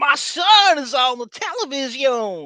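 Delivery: put-on blended French and Kentucky accent. Retelling a line where someone confused his put-on accent: mixed French and Kentucky accent. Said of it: "amazing combination of French and Kentucky".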